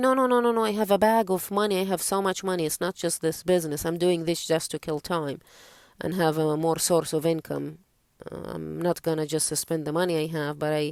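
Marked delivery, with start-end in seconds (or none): none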